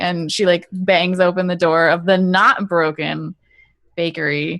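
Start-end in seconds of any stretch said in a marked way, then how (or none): none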